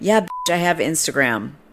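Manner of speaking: ordinary talk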